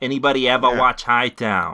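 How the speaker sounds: loud, casual, put-on Boston accent. Reading a tweet aloud to the others in a Boston accent. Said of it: "it sounds like a Boston accent".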